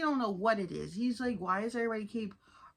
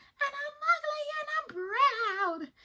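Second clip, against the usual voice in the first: play-acted shrill shout, very high, proud, stretched long.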